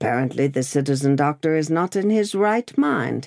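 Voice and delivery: ordinary delivery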